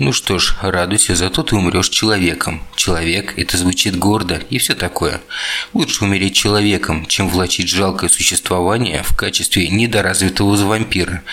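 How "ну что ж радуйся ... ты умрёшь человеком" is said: usual speaking voice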